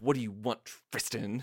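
scornful, contemptuous, harsh, disdainful tone. Recalling a show scene where Rory addresses Tristan, mock-disdainful Rory impression. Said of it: "say his name with such disdain".

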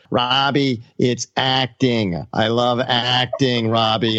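very slow drawn-out drawl, deliberately done badly. Retelling an actor's reply to the director: bad Jack Nicholson impression. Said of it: "I'm gonna butcher the impression".

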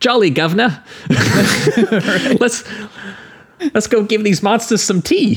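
very high, slow, cartoonish British accent. Describing someone playing a British soldier, in a cartoonish British accent. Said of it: "doing cartoon like British accents".

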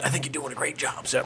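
hushed, soft, confiding whisper. Approaching the bench to speak to the judge: whispering. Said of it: "I just wanted to whisper to you".

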